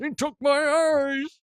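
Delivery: very high, slow, mangled words sounding tongueless. Retelling a movie scene, quoting a man whose tongue was taken: imitating a man with no tongue. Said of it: "why I'm sounding like this".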